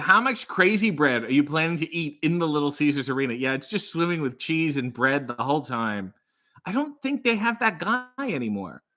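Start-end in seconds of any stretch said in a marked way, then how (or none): none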